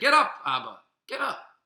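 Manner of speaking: mock hostile badgering tone. Speaker retells how Esav would speak to his father, acting out an antagonistic demand. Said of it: "in kind of a antagonistic way".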